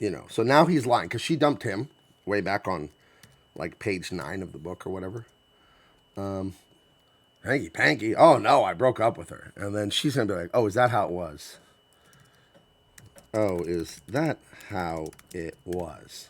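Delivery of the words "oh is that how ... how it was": play-acted low, slow, pointed passive-aggressive tone. Voicing a book character answering the man who claims he dumped her, passive-aggressive tone. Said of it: "doing that little passive aggressive thing".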